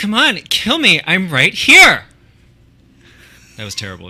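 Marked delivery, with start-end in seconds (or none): 0.0-2.0 very high, very loud, booming, drawn-out movie-style voice. Performing a movie line for the other player to guess the film, movie character impression. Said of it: "with the inflection of a character from another movie".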